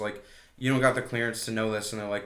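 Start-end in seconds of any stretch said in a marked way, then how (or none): none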